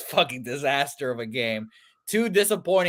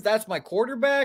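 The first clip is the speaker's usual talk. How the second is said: mock weepy, high, tearful crying voice; 9 semitones higher than usual. Asking whether the cry was like Terrell Owens: imitating Terrell Owens crying. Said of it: "a cry like Terrell Owens".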